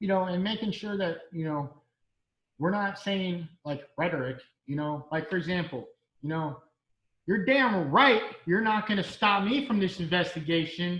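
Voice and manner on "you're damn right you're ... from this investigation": loud, raised voice. Giving an example of rhetoric to avoid in videos, raised voice. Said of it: "I raised my voice".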